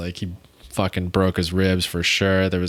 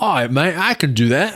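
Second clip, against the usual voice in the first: put-on slow British accent, pitched up; 9 semitones higher, 4 dB louder than usual. Retelling what a british guy there said before trying the jump, in a british accent. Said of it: "That's my British accent".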